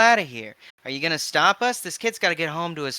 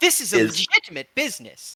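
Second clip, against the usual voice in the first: animated, swooping, protesting, arguing back hard; 3 semitones higher than usual. Voicing a character arguing during an arrest: arguing, protesting. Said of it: "Onyx Makoto is arguing".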